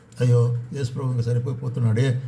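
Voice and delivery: ordinary talk, nothing marked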